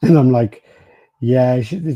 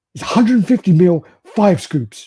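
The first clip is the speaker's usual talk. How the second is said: furious, high, really angry shout; 7 semitones higher, 4 dB louder than usual. Recounting shouting a question up the stairs and getting an answer shouted back; retelling an angry shout. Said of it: "she shouts like really angrily".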